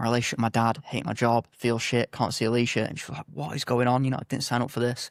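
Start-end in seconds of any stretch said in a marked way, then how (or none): none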